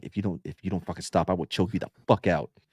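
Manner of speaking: low, hushed, threatening whisper, barely voiced. Recalling what he sometimes said to someone, retelling a whisper. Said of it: "sometimes I would whisper and be like".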